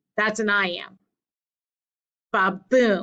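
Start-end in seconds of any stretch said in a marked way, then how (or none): 2.4-3.1 stress on the second syllable, boom. Explaining iambs using the word baboon, with stress on boom. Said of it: "you get the second syllable, the beat".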